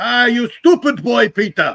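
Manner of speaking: very high-pitched put-on German accent. A man recalling his father's words to him as a boy, imitating Dad's German accent. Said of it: "He was terrible".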